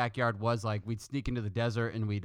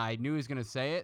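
ordinary talk

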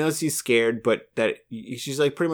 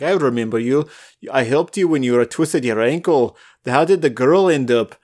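put-on Scottish accent, louder; 8 dB louder than usual. Retelling a scene, quoting Desmond: Desmond Scottish accent. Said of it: "That's better".

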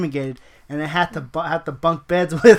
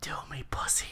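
pretend whisper, quieter; 2 semitones lower, 19 dB quieter than usual. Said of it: "and then I whisper to, in his ear".

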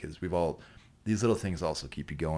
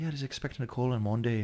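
very clumsy bad New Zealand accent, pitched up; 7 semitones higher than usual. Retelling what his mom said on the phone: bad New Zealand accent. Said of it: "worst New Zealand accent I've ever heard".

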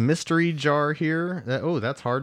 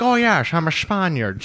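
put-on British accent, higher; 3 semitones higher, 4 dB louder than usual. Mocking an actor cast as a Spaniard: Sean Connery impression. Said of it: "And you're just like".

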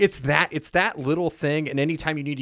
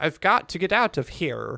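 put-on odd half-Irish accent, read flatly. Imitating a game character's line in a weird half-Irish accent. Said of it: "In his weird half-Irish accent".

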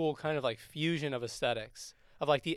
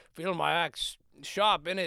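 put-on Scottish actor voice; 2 semitones higher than usual. Retelling how the Green Knight parades with his axe: Sean Connery impression. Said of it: "Great Sean Connery impression".

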